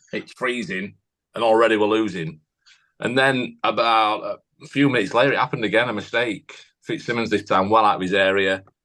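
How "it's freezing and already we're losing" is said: ordinary talk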